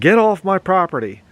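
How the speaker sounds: play-acted, high, all-out bellow at the top of the lungs. Retelling running outside at intruders: retelling a yell. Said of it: "yelled at the top of my lungs".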